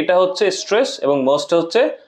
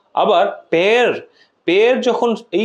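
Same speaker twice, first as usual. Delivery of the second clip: stress placed on the word pare. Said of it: "তখন আমাদেরকে জোর দিতে হচ্ছে".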